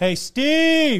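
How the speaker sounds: high, loud yell carrying across a room. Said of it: "hear one of these guys yell".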